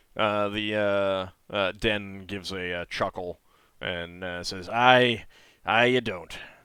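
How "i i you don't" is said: put-on slight Scottish accent, raised pitch. Voicing Den, who chuckles and answers: slight Scottish accent. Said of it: "Get a little Scottish there for a second".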